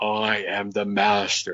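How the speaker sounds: dark, deep witch voice, very slow. Retelling what a woman said while pinning him down: imitating her deep voice. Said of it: "she had this deep voice".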